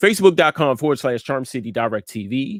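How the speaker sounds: fast, rattled-off speech. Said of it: "I'm talking too fast".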